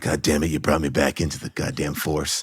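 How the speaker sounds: very low, hushed, deep and quiet grizzled voice. Recalling running around as his own Dirty Harry: Dirty Harry-style grizzled cop. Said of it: "grizzled cop".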